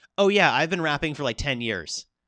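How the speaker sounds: ordinary talk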